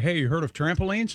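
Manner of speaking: ordinary talk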